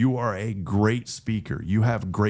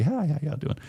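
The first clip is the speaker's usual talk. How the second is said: higher, kind of creepy, friendly voice; 6 semitones higher than usual. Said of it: "Just kinda creepy".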